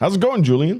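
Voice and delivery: shrill, very high yell at loudest voice. Greeting someone who has a headache, shouting. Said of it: "don't shout at me".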